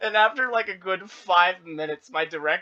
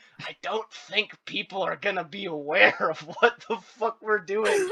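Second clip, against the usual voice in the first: put-on whispered, argumentative, disputing tone. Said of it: "talking dispute whispering while currently mic'd up".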